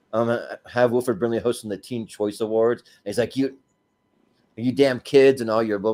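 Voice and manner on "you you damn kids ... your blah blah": cranky, fed-up, angry grumpy man's rant. Retelling a cartoon scene of the actor hosting awards: imitating angry Wilford Brimley. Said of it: "doing the whole angry man thing".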